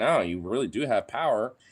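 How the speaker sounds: irritated, fed-up, aggravated insistent tone. Acting out a worker telling the union it has power: acting out an aggravated worker. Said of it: "more aggravated".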